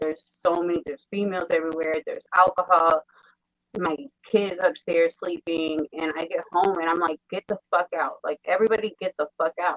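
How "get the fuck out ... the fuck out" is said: furious, snapping, angry outburst. Retelling coming home to a crowd smoking in the house: retelling own snapping at people. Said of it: "I literally snapped".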